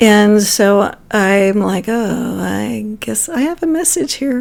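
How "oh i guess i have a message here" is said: play-acted shy, hesitant voice rising at the end. Retelling own first offer of a message: imitating own timid voice. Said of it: "Very timidly".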